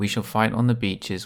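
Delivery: flat, lifeless monotone with no pitch movement. Showing how a famous speech would sound without pitch, in a flat monotone. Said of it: "Imagine if Winston Churchill had said his speech like this".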